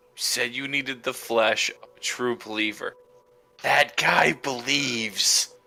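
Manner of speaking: dry, flat, expressionless deadpan delivery. In a game scene, a character answers a woman's question, deadpan. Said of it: "I just deadpan her".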